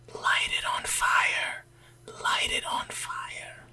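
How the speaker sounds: hushed whisper. Sneaking behind an ally in a tent, urging him: whispering. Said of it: "I'm just whispering".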